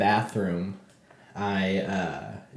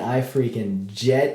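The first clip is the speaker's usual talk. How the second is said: usual speaking voice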